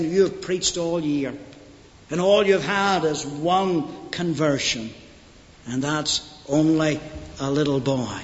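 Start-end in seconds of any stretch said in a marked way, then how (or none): none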